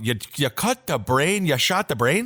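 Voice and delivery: put-on Midwestern accent. Imitating a cult leader giving ritual orders: put-on midwest accent. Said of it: "It's almost creepier with a Midwest accent".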